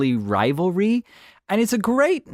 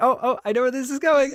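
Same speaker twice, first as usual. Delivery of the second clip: high, fast, gleeful, knowing squeal. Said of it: "He's like".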